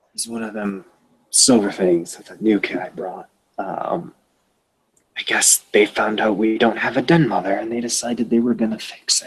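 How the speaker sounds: confiding, voiced stage whisper. Answering Chris, the speaker voices the Right Master half-whispering back to him. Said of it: "whispers back to you".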